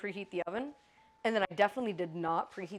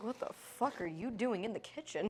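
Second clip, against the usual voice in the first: pet dog voice, scolding; 7 dB quieter than usual. Voicing the pet dog's reaction to someone in the kitchen. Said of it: "Buttercup's like".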